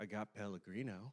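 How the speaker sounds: very low, hushed, shady under-the-breath tone. Retelling what a man answered when asked for a drink, in the weirdest tone. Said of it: "in like the weirdest tone he goes".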